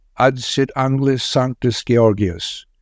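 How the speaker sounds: ordinary delivery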